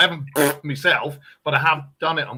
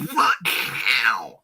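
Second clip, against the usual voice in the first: stoned, drugged-out, squawking cartoon duck voice. Showing three cartoon voices on request: Donald Duck voice on drugs. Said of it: "it's like Donald Duck if he did drugs".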